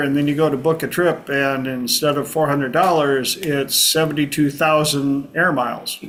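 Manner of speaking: normal talking voice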